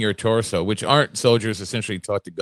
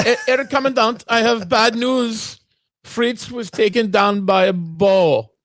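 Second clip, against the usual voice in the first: very high, slow put-on German accent, bow drawn out; 12 semitones higher, 5 dB louder than usual. Imagining the guy reporting his commanding officer's death, in german accent. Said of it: "that was a good German accent".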